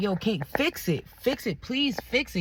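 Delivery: put-on imploring, pleading, begging voice. Retelling how he pleaded with her: imitating someone begging.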